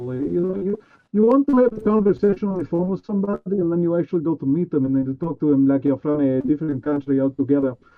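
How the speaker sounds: put-on Russian accent, foreign-sounding. Showing off switching between accents, speaker talks in a russian accent. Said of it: "you see how I just transition from Russian".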